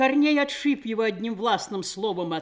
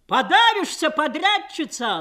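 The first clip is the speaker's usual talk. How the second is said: defiant, cheeky shout, higher and louder; 6 semitones higher, 4 dB louder than usual. Someone in the crowd of women shouts at the forewoman, defiant shout. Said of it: "задорно крикнул кто-то".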